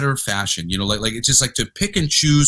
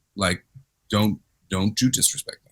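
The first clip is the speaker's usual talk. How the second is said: stern, authoritative fatherly dad voice; 5 semitones lower, 4 dB quieter than usual. Describing swapping between feminine and masculine sides, switching to dad voice. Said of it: "It's called dad voice".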